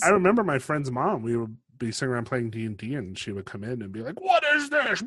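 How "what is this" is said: play-acted, very high, scolding yell. Retelling a friend's mom walking in on a D&D game; imitating someone yelling. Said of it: "like yelling at us about it".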